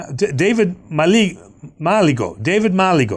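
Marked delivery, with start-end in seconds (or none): 2.4-3.2 name said with a put-on Greek accent. Saying a person's name aloud, Greek accent on a name. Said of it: "I'm giving a Greek touch there".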